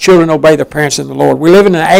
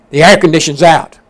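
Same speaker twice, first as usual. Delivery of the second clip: ordinary delivery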